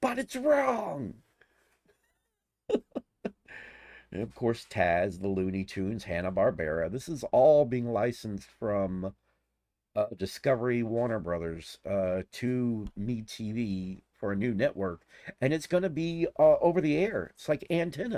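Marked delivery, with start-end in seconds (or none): 0.0-1.2 very high, slow screamed outburst. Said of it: "he'd scream".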